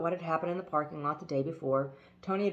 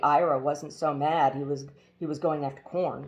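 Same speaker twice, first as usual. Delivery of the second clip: ordinary delivery, nothing marked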